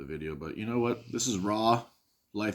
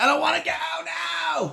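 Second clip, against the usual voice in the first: drawn-out, very high, rough spoiled-brat tantrum scream; 7 dB louder than usual. Comparing people to spoiled brats clinging to a play-place door frame; imitating a bratty screaming tantrum. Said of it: "Just kicking and screaming like".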